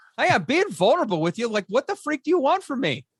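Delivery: defensive fed-up snap. Retelling snapping at a wife about being transparent: imitating own defensive outburst. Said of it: "You can tell I'm clearly emotionally regulating well".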